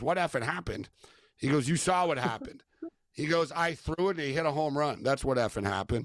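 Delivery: ordinary delivery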